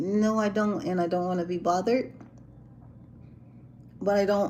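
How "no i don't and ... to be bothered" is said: plain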